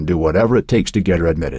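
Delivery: ordinary delivery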